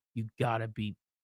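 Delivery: put-on quiet mutter. Retelling a reaction while watching something, muttered under breath. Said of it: "but I was under my breath".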